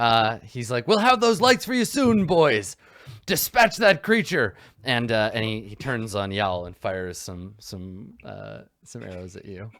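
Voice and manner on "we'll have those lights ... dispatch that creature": raised, high-pitched, loud shout. Voicing a knight calling to the men in the corner: shouting to the men. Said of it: "he shouts to the men in the corner".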